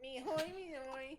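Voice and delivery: drawn out slowly at a high pitch. Joking around with the others: DoodleBob voice. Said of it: "Doodle Bob, get outta here".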